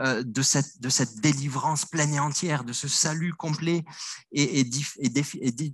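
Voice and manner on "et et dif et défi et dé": halting, restarting stumble before définitif comes out. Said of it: "Pardon, je bafouille".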